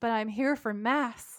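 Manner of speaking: put-on, all-innocent tone. Retelling what a character says to a guard: imitating an innocent tone. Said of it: "all innocently".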